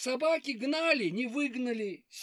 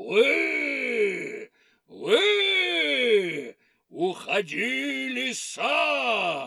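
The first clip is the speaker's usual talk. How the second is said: shouting in a scary, terrible voice; 6 dB louder than usual. Narrator voicing the wolf shouting at the fox; shouting in a scary voice. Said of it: "закричал страшным голосом".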